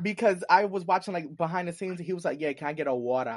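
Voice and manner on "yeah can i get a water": put-on casual Australian accent, clearly heard on "water". Retelling how a man behind the scenes asked for water: imitating an Australian accent. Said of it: "It was like how he said water".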